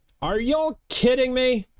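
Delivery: very high-pitched yell from a distance. Game master voicing an unseen person shouting at the players, shouting from afar. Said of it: "You hear a voice shouting".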